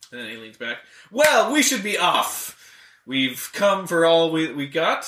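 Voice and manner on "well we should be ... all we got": cheery, easygoing, jovial, drawn-out delivery. The halfling j.b. leans back and takes his leave, jovial j.b. voice. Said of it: "A small halfling that you recognize to be J.B. / A small halfling that you recognize to be J.B. / He starts drinking. / [name]'s like pretty jovial".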